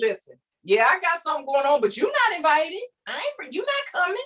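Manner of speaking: acted, snide, shady sarcastic dismissive tone, sing-song. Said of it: "'cause I'm talking like this".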